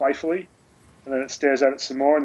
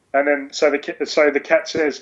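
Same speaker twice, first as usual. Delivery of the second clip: usual speaking voice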